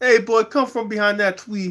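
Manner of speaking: put-on Jamaican accent. Recalling Jamaicans who scared you as a kid, in a put-on Jamaican accent. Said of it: "They used to always be like".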